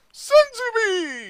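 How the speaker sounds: very high, loud, shouted fan-dub cartoon voice. Starting the game with a catchphrase: Team Four Star dub voice. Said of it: "Talking, as if I was the Team Four Star dubbing".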